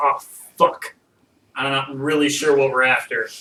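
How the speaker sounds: acted haughty, high and mighty manner. Voicing a character who gets up on the sail, acting high and mighty. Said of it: "acts like he's all high and mighty".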